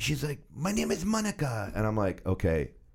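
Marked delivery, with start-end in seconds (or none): 0.5-1.7 put-on Colombian Spanish accent, pitched very high. Retelling a woman introducing herself to him, imitating Monica's Colombian Spanish voice. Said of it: "Colombian Spanish voice".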